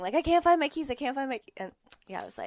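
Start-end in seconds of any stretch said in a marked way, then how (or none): 0.1-1.5 loud, high-pitched yelling. Retelling a search for lost keys: imitating own shouting.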